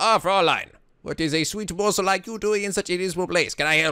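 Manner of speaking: fake German accent, laid on thick. Trying out a voice for a later character, put-on German accent. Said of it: "learn to do a German accent".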